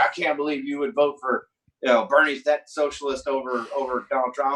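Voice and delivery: ordinary talk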